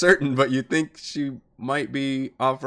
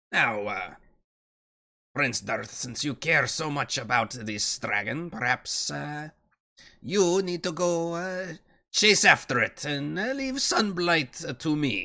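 put-on female character voice; 4 dB quieter than usual. A game master relays what she says to Prince Darth, voicing a female character.

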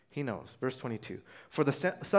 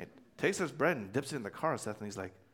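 plain

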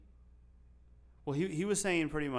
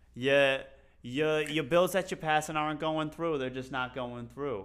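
put-on loud New York Bronx accent. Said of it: "Do it in the accent again".

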